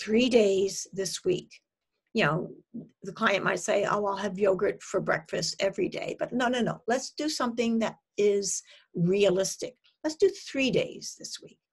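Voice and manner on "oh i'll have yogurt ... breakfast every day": usual speaking voice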